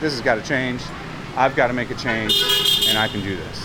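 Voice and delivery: ordinary talk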